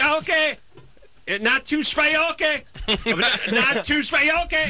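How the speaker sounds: very high, mock Thai-accented voice.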